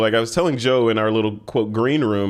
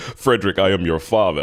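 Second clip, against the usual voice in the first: put-on menacing villain voice, lower pitch; 4 semitones lower than usual. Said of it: "Should I start breathing like Darth Vader?".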